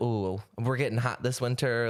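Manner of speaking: plain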